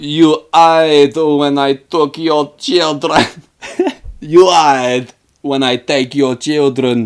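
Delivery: slow, put-on, vague Eurotrash villain accent. Retelling a cowboy vampire's line to the townspeople: Billy the Kid Eurotrash accent. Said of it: "he's got a Eurotrash accent".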